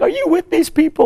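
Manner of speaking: high, loud, tearful pleading tone.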